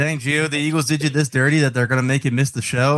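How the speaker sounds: ordinary delivery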